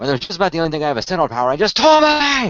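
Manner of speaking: fast Australian accent, last word yelled high.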